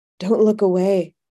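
ordinary delivery

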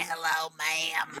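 put-on little kid voice. Telling the other speaker they sounded like this, doing a Little Rascals kid voice. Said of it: "like the kid from The Little Rascals".

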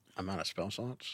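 normal talking voice

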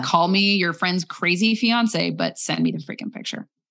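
plain

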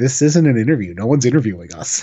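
flat, expressionless deadpan delivery. Retelling Orange Cassidy's reply when asked about an interview, imitating Orange Cassidy's deadpan. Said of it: "Orange Cassidy just straight deadpan goes".

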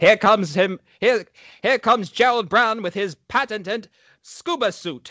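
put-on Mid-Atlantic accent. Acting out what you say when you come in, in a Mid-Atlantic accent. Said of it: "that Mid-Atlantic accent".

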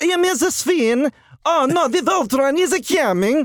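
stiff, dubbed cartoon voice. Speaker mocking the dubbed Voltron dialogue, doing a Sven voice impression. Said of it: "it would sound like Sven".

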